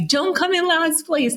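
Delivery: put-on shrill screaming, very high yelled voice. Retelling a father yelling from the stands during a race, imitating a father's yelling. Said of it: "he's screaming at me".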